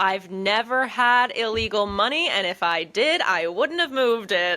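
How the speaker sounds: slow, deliberate, pointed emphatic delivery. Retelling a TV scene where a character loudly denies having money: imitating a loud denial. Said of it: "he's very loud with being like".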